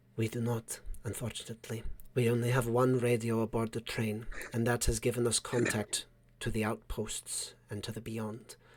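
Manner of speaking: very low, even, unvarying voice. Narrator voices the woman in the turret replying to the players, in a very low, even tone. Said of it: "you hear her respond in a very low, even tone".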